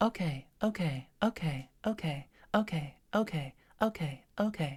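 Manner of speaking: slow, pleasant, bright, cheerful, easygoing tone. Giving a chirpy, agreeable reply over and over to whoever is talking, in a nice bright voice. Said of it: "in that nice bright voice".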